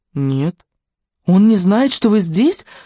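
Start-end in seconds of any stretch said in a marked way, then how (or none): 1.2-2.6 high, frightened repeat. A woman repeats her visitor's answer back to her, frightened. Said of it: "повторила она испуганно".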